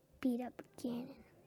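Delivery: soft whisper. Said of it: "I'm whispering, like, sometimes".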